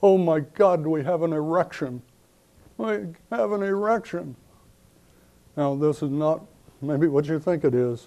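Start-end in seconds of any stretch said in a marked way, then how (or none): 0.0-4.4 mock, high, top-of-the-voice alarmed scream. Speaker recounts an Army officer on the bunker mic: retelling an officer's scream. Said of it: "screaming at the top of his voice".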